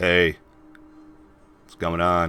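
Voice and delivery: mumbled, with words run together. Narrator voicing a character greeting the group, muttering. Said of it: "he mutters".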